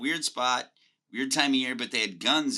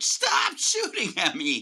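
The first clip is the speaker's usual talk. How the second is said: mock high, drawn-out scream like a child; 7 semitones higher, 3 dB louder than usual. Retelling being shot at while lying on the ground: imitating screaming like a child. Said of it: "screaming like a child".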